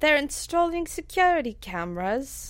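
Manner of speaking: really bad Cockney accent. Chatting on a FaceTime call, in a really bad Cockney accent. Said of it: "doing this really bad Cockney accent".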